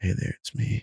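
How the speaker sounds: soft whisper. Showing another speaker how to do the whisper: whispering. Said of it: "You just kinda gotta do the little".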